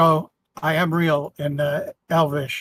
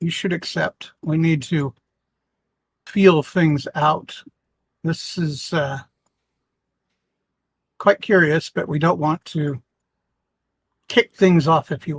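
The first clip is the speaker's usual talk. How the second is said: quiet, hushed murmur. An adventurer turns to a companion, speaking quietly. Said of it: "quietly say in common".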